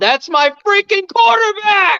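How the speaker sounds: very high, shrill, all-out yell. Recalling a press conference after the game, the speaker yells like Sam Kinison. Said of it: "Sorry for yelling".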